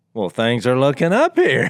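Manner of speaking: plain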